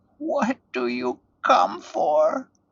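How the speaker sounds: small, shivering, shaky, trembling, very high voice. Narrator reading an old woman's question to a strange man, small shaky voice. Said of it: "she asked in a small voice that shivered and shook".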